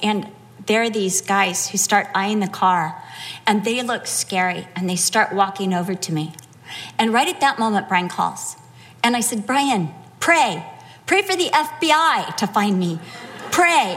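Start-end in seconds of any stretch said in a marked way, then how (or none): none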